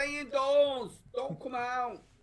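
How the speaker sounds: put-on shouting. Imagining people in the street during the outbreak: imitating someone shouting. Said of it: "just shouting".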